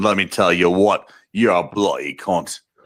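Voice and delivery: put-on tough-guy voice. Told he sounds like the guy from The Boys, launching into a Karl Urban impression. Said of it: "You're talking about my Carl Urban impression".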